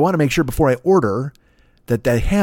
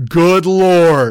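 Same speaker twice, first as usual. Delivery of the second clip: full-lung yell, raised and stretched out; 5 semitones higher, 7 dB louder than usual. Retelling blurting it out to the person on the microphone, retelling a yell at full lungs. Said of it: "At the top of my lungs".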